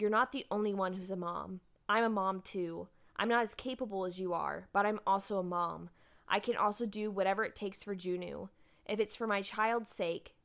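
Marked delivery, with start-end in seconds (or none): none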